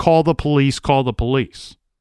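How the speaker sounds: usual speaking voice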